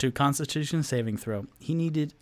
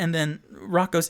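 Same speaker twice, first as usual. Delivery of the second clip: ordinary delivery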